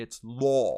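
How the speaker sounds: stretched British vowel in 'law'. Explaining how British speakers say a word, demonstrating a drawn-out British 'law'. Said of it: "they'll just kind of draw it out".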